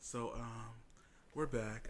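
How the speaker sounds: drawn way out, very slow, smooth and seductive. Coming back from a break, talking to the audience in a seductive voice. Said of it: "I'm trying to seduce the audience".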